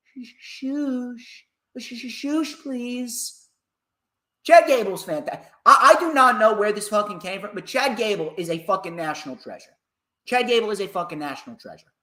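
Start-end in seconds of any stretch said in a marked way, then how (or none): 0.2-3.4 acted terrified, soft, timid, faltering, stammering hush. Retelling a wrestler's reaction on the phone: imitating a scared timid voice. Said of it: "in the most scared of scared voices".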